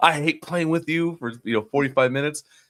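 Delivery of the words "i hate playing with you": put-on scream, pitched higher. Retelling buddies in Call of Duty Warzone screaming at each other: imitating someone screaming. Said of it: "just screaming at each other".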